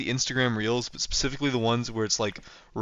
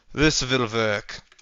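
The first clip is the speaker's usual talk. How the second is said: put-on German accent. Building a room in a game, saying a line in a German accent. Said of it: "I say in a, in a German accent for almost no reason".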